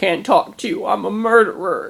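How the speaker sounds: put-on mopey, woeful, high, sad child's voice. Retelling a kid who stayed sad for days: imitating a sad child. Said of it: "He was sad".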